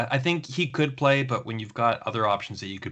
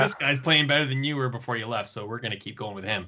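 ordinary talk

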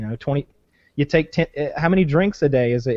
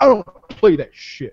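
high, put-on affronted, bristling, offended tone; 5 semitones higher, 4 dB louder than usual. Retelling a video where a man reacts to a drunk's hug: imitating an offended man. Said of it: "the guy literally got offended".

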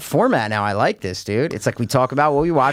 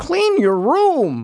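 higher put-on Canadian voice; 13 semitones higher than usual. Imitating a Canadian podcast guest: Jordan Peterson voice. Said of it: "he gets that weird, like".

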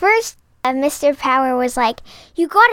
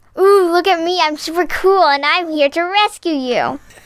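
mock cocky, smug, show-off grown-up voice. Mocking a comic drawing that looks grown-up: Franklin as a cocky show-off. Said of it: "he's like".

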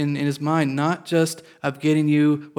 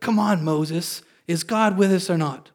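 slow, sarcastic, mock rude and scornful tone; 3 semitones higher than usual. Retelling the people's complaint to Moses: imitating a sarcastic, mocking complaint. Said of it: "And they were sarcastic, and they were rude".

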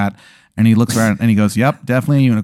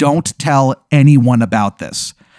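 terrible, bad put-on Maryland accent; 3 semitones higher than usual. Acting out a guy from the story; terrible Maryland accent. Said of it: "this guy's fucking terrible Maryland accent".

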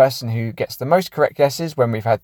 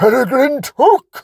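very high, loud exclamation; 13 semitones higher, 6 dB louder than usual. Naming a film character in an impression, Ian McKellen impression. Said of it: "Great impression, [name]".

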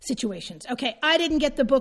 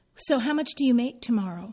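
put-on very sweet, endearing tone. Retelling what a husband asked: imitating a dearest tone. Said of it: "in the dearest tone".

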